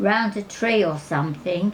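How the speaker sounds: plain reading voice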